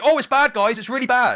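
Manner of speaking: exaggerated moral outrage, very high and loud. Redoing a line on request with more moral outrage: exaggerated mock moral outrage. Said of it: "but with more moral outrage?".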